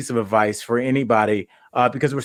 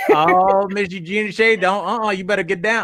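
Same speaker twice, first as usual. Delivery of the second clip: mean, scolding bus driver voice, higher; 8 semitones higher than usual. Speaker showing how she says a guest's name, in a mean bus driver voice. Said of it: "I'm saying Eugenia Shea like she's a mean bus driver".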